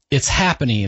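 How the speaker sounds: normal talking voice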